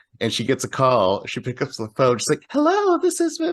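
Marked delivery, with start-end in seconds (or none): 2.5-3.4 put-on very high, sugary, sweet girly voice. Speaker retelling how a woman working there answered a call, imitating Big Bertha's girly voice. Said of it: "her voice completely changes into that high pitched, sweet, girly voice".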